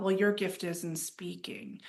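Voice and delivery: ordinary talk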